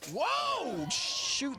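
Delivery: shrill, very high yelp, whoa stretched long. Calling the play as a player takes a shot, yelling. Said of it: "Sorry for yelling".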